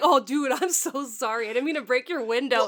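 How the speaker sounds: mock sorry tone through loud laughter. Retelling a movie character apologizing for a broken window: imitating laughing while apologizing. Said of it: "And he's laughing, too".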